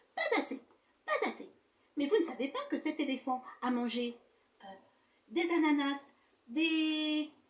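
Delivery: loud, angry, indignant outburst with "des" drawn out. Reading a story aloud, voicing Docteur Castor: angry Docteur Castor. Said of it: "s'énerve le docteur Castor".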